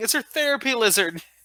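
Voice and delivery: put-on shout. Retelling what was yelled to the guards: retelling a yell. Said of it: "I was yelling".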